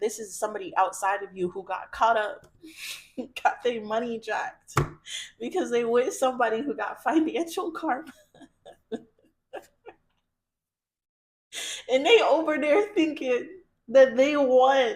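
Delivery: giggling, laughing through words, "won" stretched out. Reading tarot cards for Virgos and finding it funny: laughing while talking. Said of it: "you have to stop laughing".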